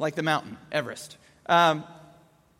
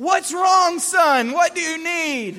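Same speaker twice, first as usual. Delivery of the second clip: high, loud, frazzled, exasperated calling out. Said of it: "I'm like".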